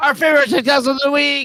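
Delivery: loud, high yelled announcer-style delivery. Host introduces the show's favorite-tiktoks-of-the-week segment, yelling the segment title. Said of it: "Stop yelling at us, [name]".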